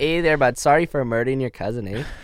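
exaggerated, over-the-top put-on Canadian accent. Joking with others about canadian serial killers, exaggerated canadian accent. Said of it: "the Canadian serial killers are like".

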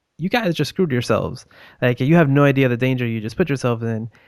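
ordinary talk, nothing marked

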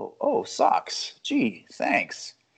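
slow, airy sarcasm. You retell Gaffigan's joke about someone buying Jesus a gift, in an airy, mock-sarcastic Jesus voice. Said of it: "in an airy, sarcastic voice".

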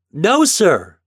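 piercing, shrill, clear, very loud voice. Ben answers the captain's question, shrill but clear. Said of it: "Ben's voice was shrill but clear".

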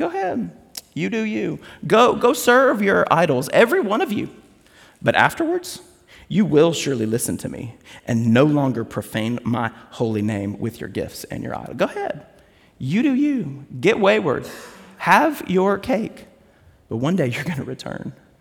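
smug, cocky, sarcastic tone with swooping pitch. Acting out God's words to Israel from Ezekiel: imitating a sarcastic, cocky God. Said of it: "in such a sarcastic kind of, like, cocky".

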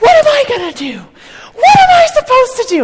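very high-pitched, loud, swooping screaming outburst. Retelling a man at the closing airport screaming at a lady, imitating a man screaming. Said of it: "He's like screaming at this lady".

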